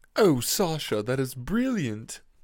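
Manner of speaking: plummy put-on upper-class drawl, slow and swooping. Wishing to always talk that way, showing a fancy monocle voice. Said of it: "I talked like I had a monocle on".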